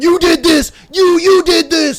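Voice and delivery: very high, shrill yelling. Retelling a man chasing a woman into the street: imitating someone yelling. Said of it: "he's yelling at her the whole time".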